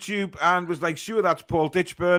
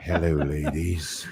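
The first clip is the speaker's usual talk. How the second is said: very deep, low voice, leaning on the mic; 13 semitones lower than usual. Reading out a listener's tweet, then Val Venus deep voice. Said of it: "With a deep voice into the microphone".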